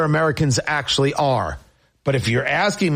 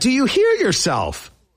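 sharp rising pitch, climbing very high; 10 semitones higher than usual. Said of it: "not a bad impression right there".

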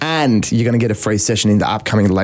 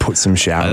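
plain

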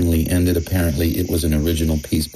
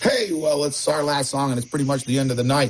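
put-on nervous, rushed, pitched-up delivery; 9 semitones higher than usual. Retelling what the piano player said into a broken mic, acting nervous. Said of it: "the piano player said nervously".

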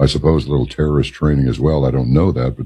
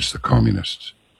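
hushed, confiding, whispered tone; 8 semitones higher, 5 dB quieter than usual. Retelling what an older man on a Greek island said: imitating a hushed tone. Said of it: "in kind of a hushed tone".

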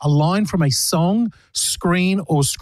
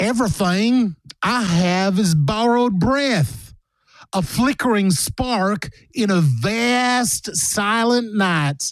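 slow, clumsy, bad fake American accent; 4 semitones higher than usual. Reading a quiz line aloud for listeners to guess, in a bad American accent. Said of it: "That was one of the worst American accents I've ever heard".

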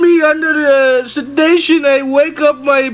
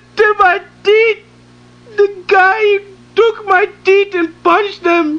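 wailing, distressed, shrieking; 5 semitones higher than usual. A man new in the country, asked to spell his name, answers; screaming. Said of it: "Why are you screaming?".

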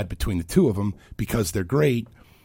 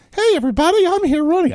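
squeaky, very high, quick cartoon voice; 7 dB louder than usual. A comedian imitates a candidate announcing a presidential run, in a Mickey Mouse voice. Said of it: "I don't know why Mickey Mouse comes out".

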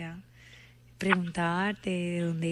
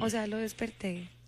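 ordinary talk

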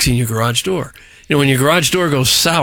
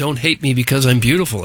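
ordinary talk

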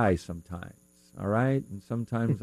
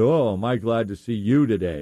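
mock dripping, heavy sarcasm, overly glad tone; 4 dB louder than usual. Retelling greeting the dentist at a morning appointment, retelling a sarcastic remark. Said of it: "real sarcastically".

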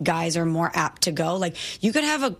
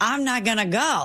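ordinary delivery

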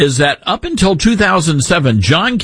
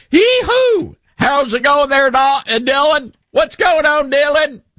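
heavy, exaggerated put-on Southern accent, pitched very high; 11 semitones higher than usual. Imitating how someone greets dylan, stronger than the speaker's own accent, exaggerated southern accent. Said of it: "I have a Southern accent, but he's like".

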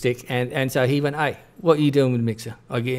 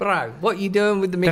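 put-on cool bro Kiwi accent, much higher; 8 semitones higher than usual. Demonstrating different Kiwi accents, the speaker asks about the mixer in a cool bro Kiwi accent. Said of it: "That sounds a little South African".

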